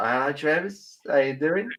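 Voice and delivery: put-on slow Australian accent, upturned line ends. Showing how they greet someone they talk to, going Australian. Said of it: "I start going Australian".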